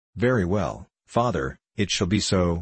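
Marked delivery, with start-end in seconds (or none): none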